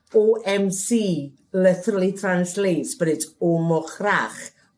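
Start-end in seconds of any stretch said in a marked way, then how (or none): none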